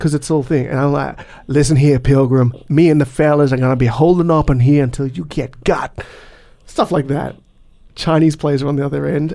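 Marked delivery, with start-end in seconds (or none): 1.5-6.0 put-on old-west frontier cowboy voice. Retelling what he said to the other team in a game: cowboy voice. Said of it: "doing their cowboy voice".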